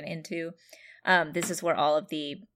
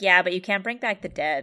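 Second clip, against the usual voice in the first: play-acted cheeky, sassy, flippant know-it-all tone; 2 semitones higher, 4 dB louder than usual. Retelling her comeback about a good-luck amulet, mock-sassy retort. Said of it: "very, like, sassily says".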